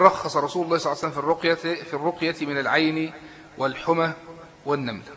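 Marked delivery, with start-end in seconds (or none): none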